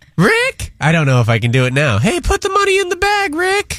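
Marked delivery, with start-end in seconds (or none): 2.0-3.8 very high, put-on cartoonish voice. Told he sounds like Morty, he tries the voice: Morty voice. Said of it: "you sound like Morty from Rick and Morty".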